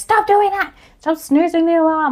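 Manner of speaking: acted, high shouting, pitched way up. Speaker acting out what you'd say to someone snoozing the alarm, yelling. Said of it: "I'm so sorry if I'm yelling in your ear right now".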